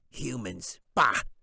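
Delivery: contemptuous, snarling goblin voice. Reading a story, the goblin who hates humans speaks in a snarling goblin voice. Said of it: "He snarled through pointed yellow teeth".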